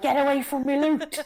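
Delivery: put-on very high loud Scouse accent. Quoting what they say when looting in Fortnite: Scouse accent. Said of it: "you're quite good at the Scouse accent".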